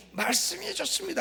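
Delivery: very high, proud, proclaiming shout. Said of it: "외쳤더니".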